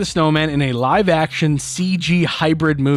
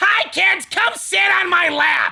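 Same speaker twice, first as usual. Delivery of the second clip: higher-pitched, screechy put-on voice. Imagining Gilbert Gottfried playing Santa Claus: Gilbert Gottfried voice as Santa. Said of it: "Imagine him playing Sa-".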